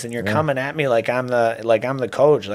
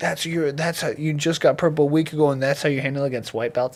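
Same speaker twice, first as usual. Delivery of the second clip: put-on angry scolding tone, higher; 4 semitones higher than usual. Retelling how a teammate scolded him after a loss: imitating an angry teammate. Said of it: "super angry guy".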